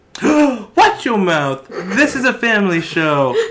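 very loud, high-pitched put-on southern belle accent. A host playfully scolds a co-host on their show, in a Southern belle voice. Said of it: "please use that voice more, [name]. That was great".

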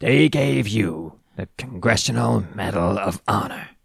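rough, creaky, rasping character voice. Speaker retelling a Forrest Gump scene, doing a Lieutenant Dan impression. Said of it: "That's my Lieutenant Dan impression".

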